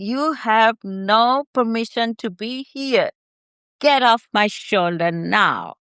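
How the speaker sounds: unconvincing delivery without any fierceness. Trying out a line the other speaker coached: unconvincing command. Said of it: "I didn't believe that".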